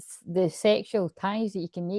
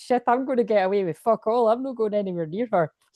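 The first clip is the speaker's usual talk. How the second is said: put-on manly American accent, much higher pitch; 3 semitones higher, 4 dB louder than usual. Mocking how guys react to her, the speaker slips into a manly American accent. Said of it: "when you go into American accent".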